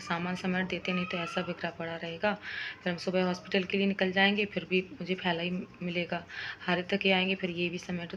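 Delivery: ordinary delivery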